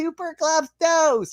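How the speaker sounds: put-on very high-pitched little-kid shout. Retelling a young fan shouting at you in the parking lot, imitating a five-year-old yelling. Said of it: "this little like he's probably a five year old".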